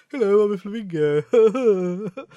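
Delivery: very slow, loud, drawn-out plummy posh bird voice. Imagining flamingos in place of guns in films: posh flamingo voice. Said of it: "That's how flamingos sound, isn't it?".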